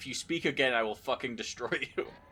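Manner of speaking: loud, hard delivery. Recalling a film clip, quoting J K Simmons: J K Simmons impression. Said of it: "that clip of J K Simmons being like".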